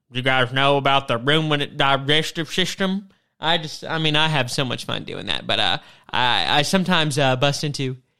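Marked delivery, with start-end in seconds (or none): 0.2-3.1 put-on country accent, faster. Joking around at the agricultural college, in a put-on country accent. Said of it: "I'll talk in this real country accent".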